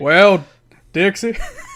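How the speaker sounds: deep, booming put-on voice, low and loud. Imitating Jerry Jarrett speaking to Dixie: Jerry Jarrett impression. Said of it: "I did Jerry".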